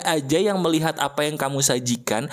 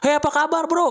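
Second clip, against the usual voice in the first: forceful, loud, very high shout; 11 semitones higher than usual. Acting out a Medan-style greeting that upset a Central Javanese friend, shouted greeting. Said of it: "lu ngapain sih teriak-teriak gitu?".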